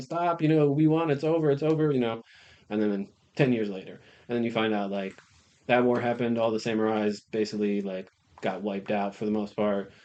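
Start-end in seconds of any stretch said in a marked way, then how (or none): 0.0-1.9 put-on, high-pitched screaming cry. Retelling a samurai's reaction to an artillery attack: imitating someone screaming.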